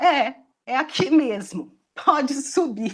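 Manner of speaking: speech mixed with laughter. Retelling a porter's reply during an interview visit, laughing while talking. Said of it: "Então eu tô rindo".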